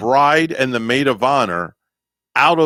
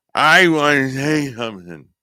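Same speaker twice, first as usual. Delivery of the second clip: put-on drunken, slurred speech. Retelling how a bride stood up at her wedding: imitating a drunk bride. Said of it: "in, like, a drunken stupor".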